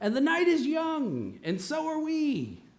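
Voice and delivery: put-on Italian accent, high and swooping. Retelling a phrase a man kept saying that night, imitating an Italian accent. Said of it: "The Italian accent got me".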